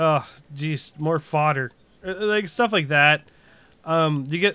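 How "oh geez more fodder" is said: ordinary talk, nothing marked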